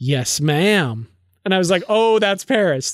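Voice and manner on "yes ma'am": dry sarcasm under a show of obedience. Quoting what a character in the novel says to Janeway, mock-sarcastic. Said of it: "he says sarcastically to Janeway".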